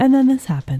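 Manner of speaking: acted casual deadpan delivery. Imitating the other speaker's poker-face way of springing a twist: imitating a blasé poker-face delivery. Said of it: "you just straight up just go".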